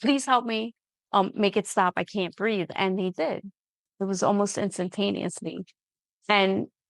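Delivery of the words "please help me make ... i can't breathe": normal talking voice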